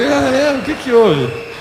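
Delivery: fake kindly surprise.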